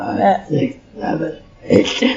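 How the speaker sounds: loud, monstrous put-on demon voice. Showing the others their demon voice on request: demon voice. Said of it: "enjoy my demon voice".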